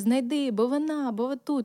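put-on shouting. Retelling a phone call in which mom demands boots: imitating mom shouting. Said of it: "не кричи".

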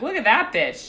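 acted sarcastic tone. Acting out a woman's sarcastic comment about Marie Kondo: mock-sarcastic remark.

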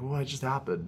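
quiet, hushed library voice.

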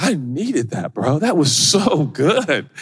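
acted tearful, choked-up voice. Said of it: "I start tearing up".

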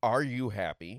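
ordinary talk

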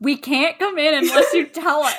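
angry, mad, indignant, put-out insistence. Retelling how visitors got mad at being refused entry: imitating someone mad. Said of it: "they got mad and they were like".

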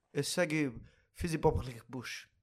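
Israeli-accented speech. Joking back to a co-host's question in banter, in a put-on Israeli accent. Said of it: "That's my best Israeli accent".

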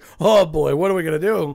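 put-on loud elderly woman voice. Showing what 100 on the Matt shocked meter would be, Yenta voice.

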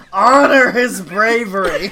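roaring out. Imagining a shout coming from the back while Videl sits in the front row: bellowing.

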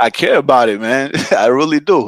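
on the verge of crying. Speaker tells someone how much he cares about their passion, about to cry. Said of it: "you hear me about to cry on this thing".

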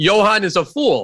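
put-on heavy German accent. Imitating the speaker's grandpa from Germany, thick German accent. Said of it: "He'd have that thick German accent saying".

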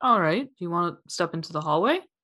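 plain

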